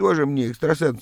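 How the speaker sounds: ordinary delivery, nothing marked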